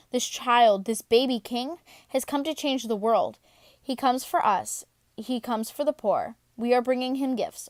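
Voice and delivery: ordinary talk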